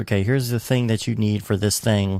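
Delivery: ordinary delivery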